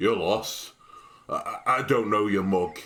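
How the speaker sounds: hoarse, distrustful voice. A narrator voices a large man on a roof tower eyeing a lost stranger: hoarse, distrustful voice. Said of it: "his voice is hoarse".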